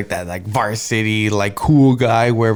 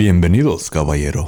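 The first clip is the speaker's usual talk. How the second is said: deep Spanish-language TV broadcast announcer voice; 5 semitones lower than usual. Greeting a guest in Spanish: Telemundo announcer voice. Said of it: "you can do the Telemundo voice".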